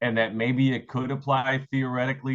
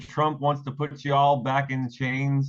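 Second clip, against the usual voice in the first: slow, put-on Southern drawl. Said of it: "he said it with the Southern drawl".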